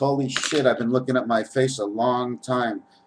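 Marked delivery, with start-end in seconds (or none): none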